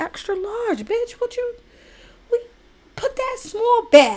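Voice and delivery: very high-pitched whisper. Retelling how the speaker spoke to a saleswoman at the mall: retelling a whisper. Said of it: "I had to whisper to her".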